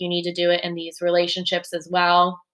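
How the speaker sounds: plain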